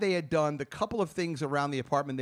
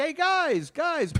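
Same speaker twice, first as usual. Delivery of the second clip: loud calling out, pitched very high; 13 semitones higher, 4 dB louder than usual. Retelling coming back into the apartment and calling out: imitating own yelling. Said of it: "So I'm yelling".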